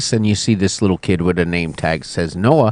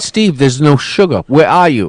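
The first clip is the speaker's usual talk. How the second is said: acted-out, mild, panicky, screaming cry; 5 semitones higher than usual. Retelling a panicked morning phone call: imitating own past screaming. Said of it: "And I'm screaming at Steve".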